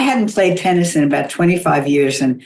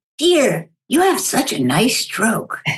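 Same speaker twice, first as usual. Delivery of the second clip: rough, gravelly, higher-pitched voice; 6 semitones higher than usual. Retelling what a woman said to the speaker, imitating a gravelly voice. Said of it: "she had this gravelly voice".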